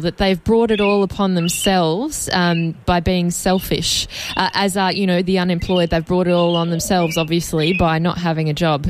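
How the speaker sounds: plain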